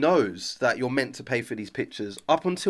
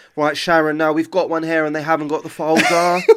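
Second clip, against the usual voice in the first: mock sarcastic tone throughout, loud and jabbing; 2 semitones higher, 6 dB louder than usual. Retelling what someone told a colleague, in a sarcastic tone. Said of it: "Sarcastic tone".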